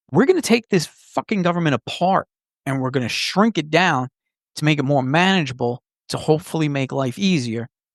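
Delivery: ordinary talk, nothing marked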